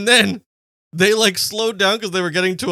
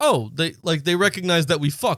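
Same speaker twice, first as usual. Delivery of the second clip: plain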